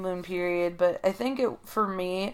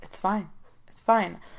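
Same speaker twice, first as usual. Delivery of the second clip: soft, gentle, passive-aggressive tone hiding annoyance. Acting out how he replies when the speaker tries to tell him something, imitating his soft voice. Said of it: "that soft voice".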